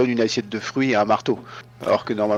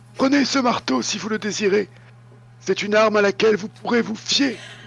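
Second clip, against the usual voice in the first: put-on very high, elderly hermit voice; 11 semitones higher than usual. Reading a gamebook aloud, voicing the hermit offering a war hammer to Lord Kai, old hermit voice. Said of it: "J'aime bien faire les voix de vieille ermite".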